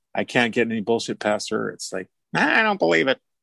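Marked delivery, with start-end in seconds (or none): 2.4-3.2 high, exaggerated, mock disbelief. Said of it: "Well, she doesn't talk like that".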